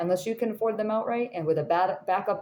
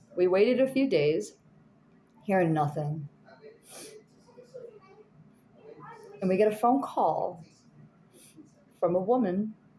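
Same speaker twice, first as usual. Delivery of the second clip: tearful, speaking through tears. Telling a congregation about waiting for news and then a phone call, crying. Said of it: "Sorry, I'm crying".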